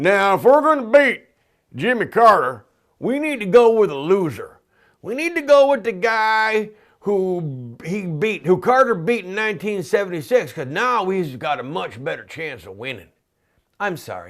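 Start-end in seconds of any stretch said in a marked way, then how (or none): 0.0-13.1 loud put-on Southern drawl, "guy" drawn out. Ridiculing a party's plan to run a former loser, speak in a mocking southern accent. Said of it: "I used a Southern accent".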